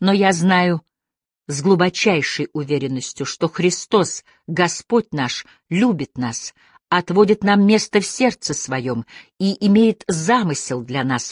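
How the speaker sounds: plain reading voice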